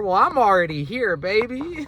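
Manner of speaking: mock cocky, high and loud.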